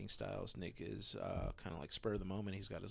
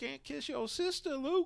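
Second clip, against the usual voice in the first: put-on old man voice, higher and louder; 5 dB louder than usual.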